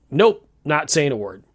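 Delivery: ordinary delivery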